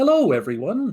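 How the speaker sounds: booming, high, much-too-loud, overloud voice. Narrating a character greeting the group after a Rizzo appears; much too loud voice. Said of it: "honestly much too loud of a voice".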